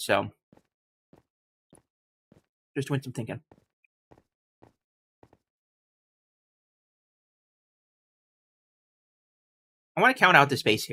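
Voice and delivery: talking while chewing, mouth full of food. Thinking aloud while counting spaces, still eating, talking while chewing. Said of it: "I'm still chewing".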